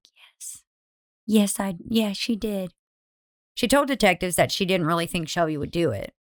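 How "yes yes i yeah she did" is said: small, soft, slow voice with stammering. Speaker retells a woman answering a detective's question: imitating her little soft voice. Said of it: "in this little soft voice".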